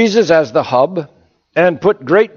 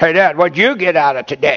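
taunting, derisive, mocking tone of voice. Speaker showing how not to question a father, in a mocking tone. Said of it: "You don't do it like in a mocking tone of voice".

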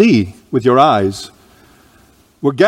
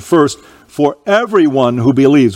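heavy stress placed on the word everyone. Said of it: "with the emphasis on the word everyone".

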